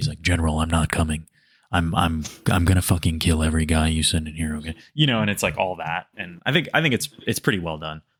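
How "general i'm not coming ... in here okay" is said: voice pressed right up close to the mic. Imitating the game's main character, who speaks close to the mic: close-to-the-mic delivery. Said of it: "I get really close up to the mic".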